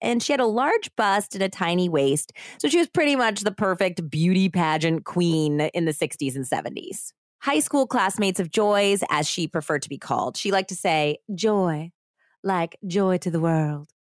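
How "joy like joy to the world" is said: heavy, bad, put-on American Southern accent. Speaker quotes a former pageant queen she is describing, imitating Joy's thick Southern accent. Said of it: "Was it that thick of an accent?".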